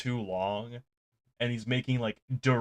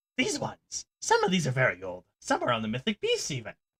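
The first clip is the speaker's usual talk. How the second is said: swooping rat folk character voice; 3 semitones higher than usual. Voicing a small rat folk shopkeeper pointing at old books: rat folk character voice. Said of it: "he points at the books and he goes".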